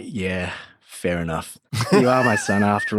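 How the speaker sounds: put-on resigned voice. Retelling how the father reacted to leaving corporate law: imitating a resigned father. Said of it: "a resigned kind of reaction of like".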